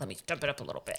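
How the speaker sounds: switched-on, confident boss-mode voice. Retelling how she switched into work mode with agents: imitating own boss-mode voice. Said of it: "even my voice would change".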